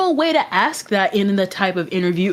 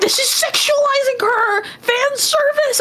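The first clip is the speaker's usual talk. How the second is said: very high, upset shrieking scream. Retelling how fans reacted to promotional art: imitating fans screaming.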